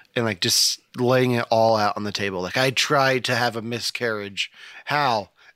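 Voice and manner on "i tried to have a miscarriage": ordinary delivery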